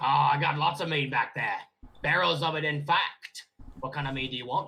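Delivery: put-on orc character voice. Voicing the orc bartender greeting a player's character: orc bartender voice. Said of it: "says the orc bartender".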